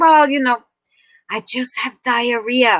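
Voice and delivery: imitated whispering. Retelling a phone call with the boss about being sick: imitating someone whispering. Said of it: "Why are you whispering?".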